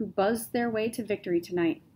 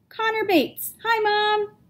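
very high, loud, slow on-mic voice; 11 semitones higher, 3 dB louder than usual. A young man introduces himself into the mic, speaking loudly. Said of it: "Connor spoke loudly into the mic".

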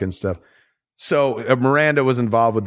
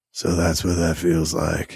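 low masked-vigilante disguise voice; 5 semitones lower, 3 dB quieter than usual. Retelling a scene where Batman speaks after a woman vanishes, Batman voice. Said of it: "But he does it in the voice".

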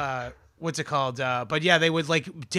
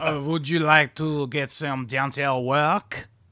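clumsy, bad put-on French accent. Playing a Frenchman in a joking bit: bad French accent. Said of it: "I'm not that good at the French accent".

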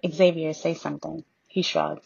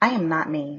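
with a scoff. A narrator reads her reply to him in his dark room, scoffing. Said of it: "I scoffed".

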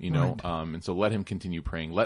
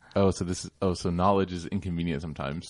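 ordinary delivery

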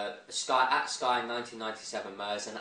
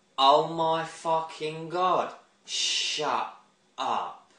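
loud, very slow, drawn-out put-on Essex accent; 6 semitones higher, 5 dB louder than usual. Speaker addresses Ashford Swag, trying out a put-on voice: proper Essex accent. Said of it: "proper Essex accent there".

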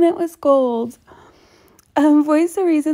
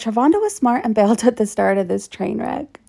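ordinary talk, nothing marked

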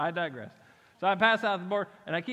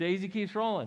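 plain

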